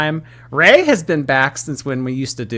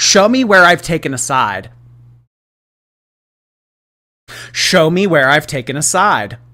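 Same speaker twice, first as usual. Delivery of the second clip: loud, preachy, priestly delivery with dramatic pauses; 3 semitones higher, 5 dB louder than usual. Mocking how a woman pauses after she says things, imitating priest-like dramatic pauses. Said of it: "her pausing after she says things for dramatic effect, like a priest does".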